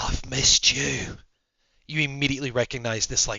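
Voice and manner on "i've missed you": put-on sultry, seductive, smoky Australian accent. In a radio call-in drama, a familiar caller speaks up in a sultry, smoky Australian voice. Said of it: "sultry, smoky Australian voice".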